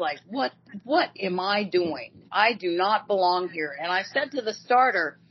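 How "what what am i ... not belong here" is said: put-on, sudden, panicked alarm. Retelling own first race behind the gate: imitating own past panic. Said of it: "and I was panicking".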